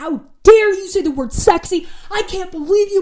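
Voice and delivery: high, loud, enraged, furious screaming yell. A golfer recounts the coach yelling at them off the bus, imitating a furious scream. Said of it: "He's like furious".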